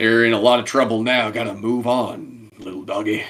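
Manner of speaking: bad put-on, very low narrator voice. Describing a narrator's voice, doing a terrible Sam Elliott type voice. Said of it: "That was a terrible impression".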